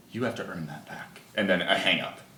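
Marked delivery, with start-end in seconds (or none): 0.1-1.2 very soft, hushed, breathy, soothing feminine voice. Voicing a caller on the line: soothing, breathy feminine voice. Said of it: "a very soothing, breathy, feminine voice".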